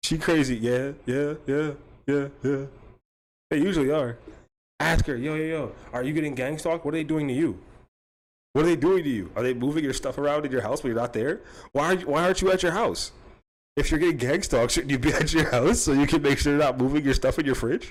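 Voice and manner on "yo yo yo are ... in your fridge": snide, needling, sarcastic and taunting tone. Suggesting what to ask her about gang stalking: sarcastic mock questioning. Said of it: "I'm a sarcastic piece of shit".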